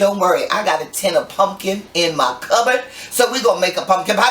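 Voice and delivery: normal talking voice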